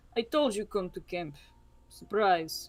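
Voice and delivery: completely expressionless, flat, deadpan, no inflection. Narrating a character greeting a player's character who arrived at camp, deadpan. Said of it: "he's always completely deadpan".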